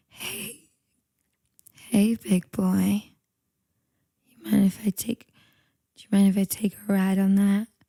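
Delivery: put-on seductive voice, very low and sexy. Asked by the other host for a sexy voice, showing it off: sexy voice. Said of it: "here's my sexy voice".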